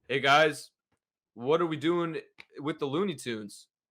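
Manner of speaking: dead flat monotone with no inflection. Imitating how Jordan read his movie lines: flat monotone. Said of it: "Jordan read things in a monotone expression. He literally. This was him".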